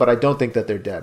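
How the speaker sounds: plain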